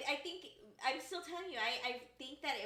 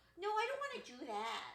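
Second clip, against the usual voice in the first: mock baby talk, higher pitch; 5 semitones higher than usual. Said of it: "like that".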